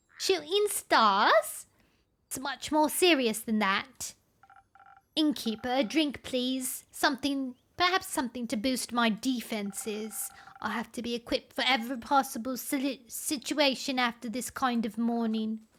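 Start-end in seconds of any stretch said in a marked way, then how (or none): 0.2-4.2 put-on, attempted British accent. Rereading a vampire character's line: attempted British accent. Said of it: "She needs a British accent".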